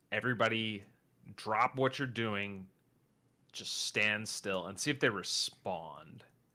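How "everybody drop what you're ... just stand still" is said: ordinary delivery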